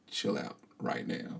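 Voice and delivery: calm and quiet. Describing walking into a noisy room to quiet it: very calm. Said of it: "if I walk in really calm".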